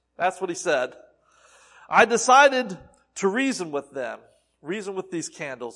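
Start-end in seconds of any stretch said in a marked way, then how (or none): none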